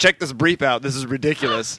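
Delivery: ordinary talk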